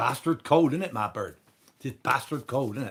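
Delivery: imitated Devon accent. Retelling what a worker on a building site said: Devon accent. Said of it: "A guy goes".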